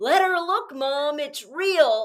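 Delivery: high, very slow, drawn-out call-out. Retelling a stranger calling out from a car window: imitating someone shouting. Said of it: "she shouts out from the corner".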